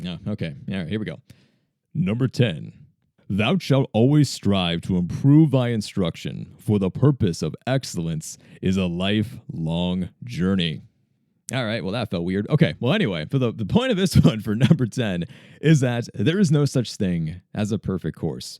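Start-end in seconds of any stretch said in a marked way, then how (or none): 1.9-10.8 put-on deep, old-style solemn voice. Speaker reads out the last commandment of a list in a deeper biblical voice. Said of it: "more deeper biblical voice".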